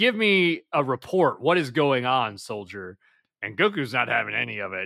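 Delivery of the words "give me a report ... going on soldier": usual speaking voice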